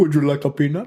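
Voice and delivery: odd, weird put-on French accent. Show how a man with charisma would have to speak, in a weird french accent. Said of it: "he was like French".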